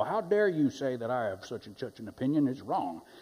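swooping, indignant, outraged cartoon rooster voice. Acting out someone mad at being called out, in Foghorn Leghorn voice. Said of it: "that was my foghorn leghorn voice there".

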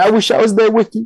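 put-on sobbing, very high-pitched and tearful. Retelling a video of a fan crying to the camera: imitating a crying fan. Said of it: "in full tears, crying".

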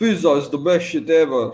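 accent coming out Russian. Asked to repeat an accent attempt, saying it again in a Russian-sounding accent. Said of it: "That actually sounds Russian".

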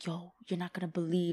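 hushed whisper. Retelling what the speaker whispered to him in the moment, whispering. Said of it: "I'm like whispering".

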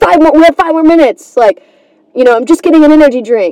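acted annoyed voice, irritated and impatient. Retelling what they'd say to the man who locked the door, mock-irritated. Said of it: "I'd be kind of pissed".

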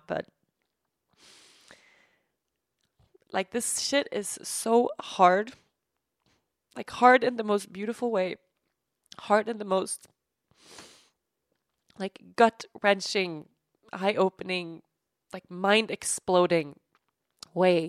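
tearful, crying while talking. Talking about a friend who does it all alone, crying while talking. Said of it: "I'm crying now".

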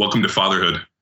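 put-on smug, smart-ass tone. Retelling a reply on a phone call, imitating a smart-ass tone. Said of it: "kinda like a smart ass".

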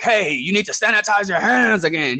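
aggressive high yell. Retelling how a man came around the corner at him, retelling a yell. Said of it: "start yelling and was like".

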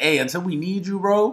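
plain

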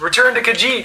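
very high-pitched yell in a character voice. Calling a companion back across the room: yelling in character. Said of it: "And then I yell to Accordia".

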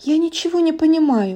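high, stammering, fearful, frightened babble. A princess, pressed against a rock in fear, to the hunter; frightened babbling. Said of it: "пролепетала принцесса".

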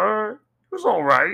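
high, slow, unimpressed tone. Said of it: "he said".

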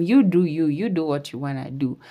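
ordinary delivery

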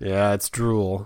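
mock drowsy, groggy, barely awake, half-asleep voice. Retelling being woken by his daughter, the speaker answers her: acting groggy. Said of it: "I groggily stated".

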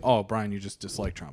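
plain

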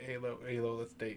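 bold, unafraid, fearless voice. Retelling asking someone out in eighth grade: imitating own eighth-grade self. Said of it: "This is eighth grade [name]".

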